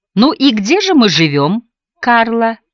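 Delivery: slow, sing-song, sarcastic and disbelieving. Narrator reads a man questioning Charlotte, whom he calls Karla: sarcastic. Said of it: "прозвучало в его устах с сарказмом".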